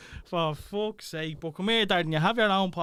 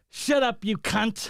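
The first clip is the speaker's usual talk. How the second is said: slow put-on English accent, words drawn out; 4 semitones higher than usual. Retelling what the other speaker said in a video: imitating an English accent. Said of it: "you had an English accent on you".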